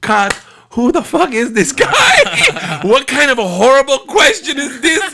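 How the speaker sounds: very high put-on voice, slow, through laughter. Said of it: "breaks out laughing".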